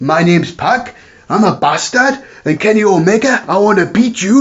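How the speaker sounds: put-on Geordie accent, a touch high. Imitating Pac cutting a promo: Pac Geordie accent impression. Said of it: "tone down his Geordie accent".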